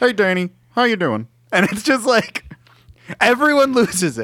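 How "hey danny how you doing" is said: frog puppet character voice. Retelling how Kermit greeted an actor on set: Kermit the Frog voice. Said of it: "but Kermit the Frog".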